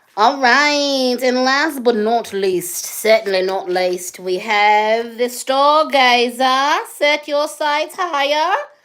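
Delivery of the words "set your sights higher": Australian accent, pitched up. Introducing the stargazer, the speaker gives its line in an accidental australian accent. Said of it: "Feel like Australia came out of me".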